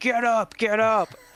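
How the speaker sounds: very high, very stretched-out, drawn-out screaming. Retelling a coach yelling at an injured star player: imitating Joe Mazzulla screaming. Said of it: "screaming at him".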